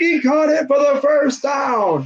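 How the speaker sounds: big delivery while keeping composure. Showing how the announcer calls a catch: Joe Buck impression, voice getting loud. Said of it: "He'll be like".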